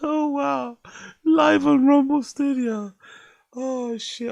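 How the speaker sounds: crying with laughter. Reacting to a video, crying with laughter. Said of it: "I'm sorry, I'm crying".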